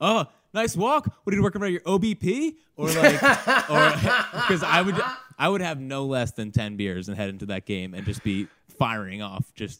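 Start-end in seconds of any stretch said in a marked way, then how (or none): 0.0-2.6 put-on, pitched-up, cynical sarcastic yell. Recalling watching old players' games, acting out yelling at batters who walked. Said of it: "I would just start yelling like".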